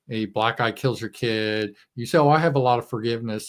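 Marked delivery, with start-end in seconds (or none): none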